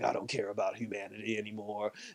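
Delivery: low, quiet, cold monster voice.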